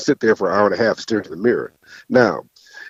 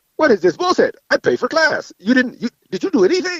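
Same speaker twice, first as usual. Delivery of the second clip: high-pitched put-on Korean accent. Retelling a mom picking up her son after class, in her Korean accent. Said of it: "in her Korean voice".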